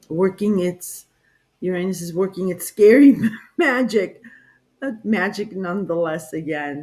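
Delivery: words spoken through nervous giggling laughter. Giving a forecast for the month, laughing while talking. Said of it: "I'm so sorry I keep laughing".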